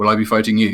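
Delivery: very flat, level, inflectionless monotone creature voice. A game master voices a creature walking over to the party, in a flat creature voice. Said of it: "it speaks very flatly".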